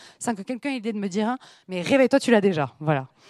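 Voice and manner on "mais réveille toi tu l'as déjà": usual speaking voice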